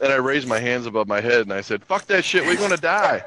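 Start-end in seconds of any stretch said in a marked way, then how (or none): 1.8-3.2 acted, high-pitched yelling. Retelling a moment in a loud truck during a tornado: imitating someone yelling. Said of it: "you were yelling 'cause it was really super loud".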